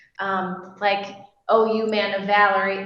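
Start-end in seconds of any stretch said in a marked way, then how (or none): 1.5-2.9 very sarcastic, teasing put-on voice. Retelling a story line the way they always heard it: put-on sarcastic tone. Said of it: "in a really sarcastic voice".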